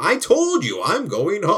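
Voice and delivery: put-on slow, drawn-out, swooping old man voice. Describing a character's stubborn habits to a friend, doing an impression of him as an old man, old man voice. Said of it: "he's just like an old man".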